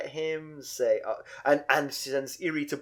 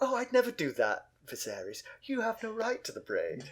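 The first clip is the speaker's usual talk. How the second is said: soft, sing-song, snarky, sarcastic voice; 7 semitones higher, 7 dB quieter than usual. Discussing a scene, imagining Daenerys answering Viserys: mock-snarky Daenerys voice. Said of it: "saying this in a sort of snarky voice".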